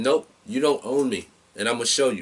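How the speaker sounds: usual speaking voice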